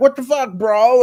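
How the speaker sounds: high, loud, shocked yell.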